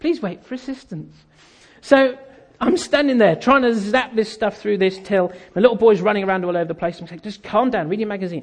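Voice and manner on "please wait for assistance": soft, condescending, patronizing machine voice. Complaining about self-service checkouts, imitating the machine: patronizing checkout machine voice. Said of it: "That patronizing voice".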